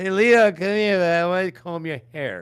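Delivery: pretend stoned voice. Imagining touching the screen to talk to Leon: acting stoned. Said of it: "Totally stoned out of my mind".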